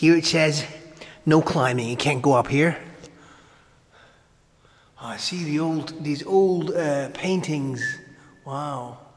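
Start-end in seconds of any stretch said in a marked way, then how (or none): none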